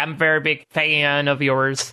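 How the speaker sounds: lazy, slow, drawn-out Southern drawl. Imitating a woman's greeting to a chef: imitating Michelle's Southern drawl. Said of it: "that, like, drawl".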